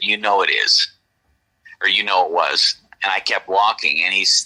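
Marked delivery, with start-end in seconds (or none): 0.0-2.8 mimicked disdainful tone, lower. Retelling own reply to a man asking about gunfire: imitating own disdainful tone. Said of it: "kind of with disdain in my voice".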